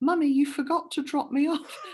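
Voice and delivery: put-on very high, tiny little child voice. Retelling what a daughter said from the back seat: imitating a small child's voice. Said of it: "This little voice from the back seat goes".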